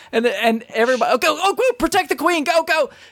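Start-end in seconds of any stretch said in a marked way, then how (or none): 1.2-2.9 shrill, very high, hectic shouted yelling. Retelling how players at the arcade game yell: imitating players yelling. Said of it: "So everybody's just yelling".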